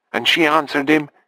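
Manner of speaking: ordinary delivery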